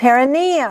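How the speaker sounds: perineum with stress placed on the ne syllable. Reading a list of medical terms, perineum stressed on ne. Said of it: "N E is the accent".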